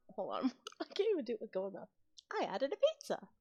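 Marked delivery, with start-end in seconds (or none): 2.3-3.1 high, put-on, cartoonish Italian accent. Jokingly adding a silly food exclamation to show how an over-the-top accent would sound, using a cartoonish italian accent. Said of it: "Italian accent?".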